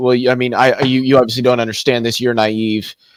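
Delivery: ordinary delivery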